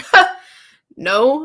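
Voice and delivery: put-on weak, unconvincing 'no'. Retelling how a friend answered being accused of keeping a gift, unconvincing denial. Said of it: "in like the least convincing voice possible".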